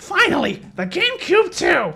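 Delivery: very high, loud, slow put-on voice. Guessing at a line from a fan dub: Jet voice. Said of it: "I just tried to do his voice".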